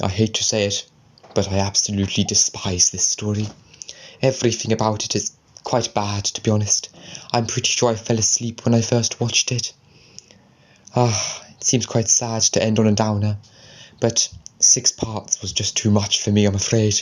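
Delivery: ordinary delivery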